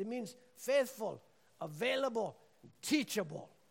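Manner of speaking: put-on English spoken with a Kenyan accent throughout. Retelling a talk with a pastor in Kenya, quote his explanation, mimicking a Kenyan pastor's accent. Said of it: "so I'm mimicking his accent".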